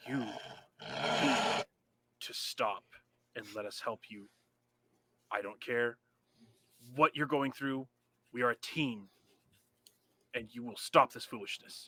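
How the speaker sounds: breathy whispered growl, very low, angry but calm. A very angry character confronts a teammate, low growl, speaking calmly. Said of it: "with a very low growl because he's very angry, but he's speaking very very calmly".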